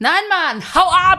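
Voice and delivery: screamed at full volume, very high and shrill. Retelling how a man yelled after being asked if he was okay, retelling a shout. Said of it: "dann schreit er so".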